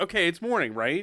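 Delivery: normal talking voice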